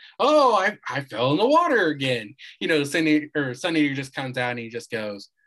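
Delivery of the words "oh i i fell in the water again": high, loud, slow, big swooping delivery. Retelling a fight scene, quoting Lemillion: imitating Lemillion. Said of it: "Lemillion's like the".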